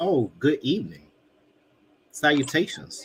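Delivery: put-on voice, swooping, every word stretched out. Opening the podcast, the host greets listeners in the Birdie Matt voice. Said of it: "In my Birdie Matt voice".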